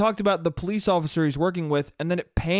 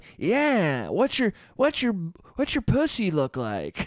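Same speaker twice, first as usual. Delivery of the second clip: put-on creepy old man, swooping sing-song. Mocking how voice actors read out text messages, in a creepy old man voice. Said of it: "with a creepy old man going".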